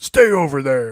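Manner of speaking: loud, slow game-villain yell.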